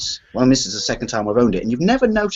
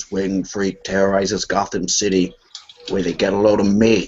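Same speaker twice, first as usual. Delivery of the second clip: really deep, low villain voice; 5 semitones lower than usual. Describing the best bit in the movie, doing the Joker's really deep voice. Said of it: "does his really, really deep voice and he goes".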